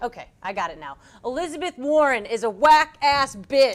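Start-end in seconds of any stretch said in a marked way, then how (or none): 1.2-3.8 crude, over-the-top delivery, higher and louder. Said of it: "So you want me to do it like the real news?".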